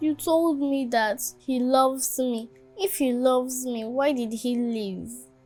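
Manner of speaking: tearful, crying speech. Asking why Dad left if he loves them, crying while talking. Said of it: "Stop crying".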